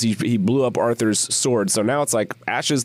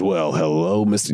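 swaggering cowboy voice, lower; 5 semitones lower than usual. Retelling a movie scene where the hero taunts a duke: John Wayne swagger voice. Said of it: "using the most twentieth century John Wayne swagger".

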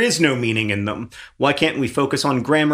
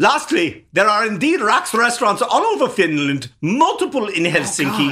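put-on Austrian accent, pitched up; 7 semitones higher than usual. Showing off accents to a co-host, the speaker does an austrian accent. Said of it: "This is my Austrian".

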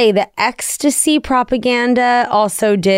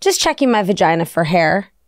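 put-on, completely serious, matter-of-fact delivery; 5 semitones lower than usual. Retelling what a four-year-old niece said: imitating someone dead serious. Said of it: "she looks at me dead serious and she goes".

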